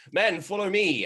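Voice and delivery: loud rousing shout. Voicing a commissar leading a charge: commissar calling men to charge. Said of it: "he hefts his bolt pistol and he goes".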